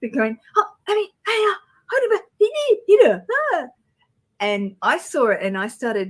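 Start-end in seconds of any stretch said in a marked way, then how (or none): 0.6-3.7 high, loud panicked babble. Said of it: "They're freaking out".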